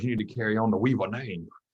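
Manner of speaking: put-on Louisiana accent. Talking about a late grandfather, speaker quotes him in a Louisiana accent. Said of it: "That was a good accent".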